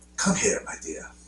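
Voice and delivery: put-on hushed, mild-mannered murmur with a slight British accent. Showing a fellow fan how the actor talks, in a mild-mannered, slightly British James Mason voice. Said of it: "He talks like this".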